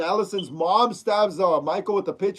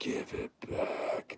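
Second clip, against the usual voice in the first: very quiet, barely audible whisper. Showing viewers the character's one line in the scene, imitating a whisper. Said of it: "He goes like that".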